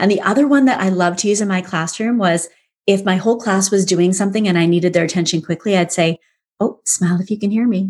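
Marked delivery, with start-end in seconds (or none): 6.6-7.9 hushed, soft voice. Teacher recalling how they got the class's attention, quiet voice. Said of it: "I'd say it in a quiet voice".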